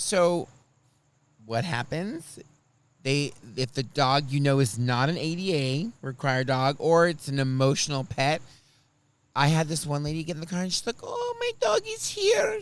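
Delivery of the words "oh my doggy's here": very high, slow put-on Russian accent. Speaker retelling a passenger getting in the car with her dog, imitating a russian accent. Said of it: "She was Russian. She had an accent".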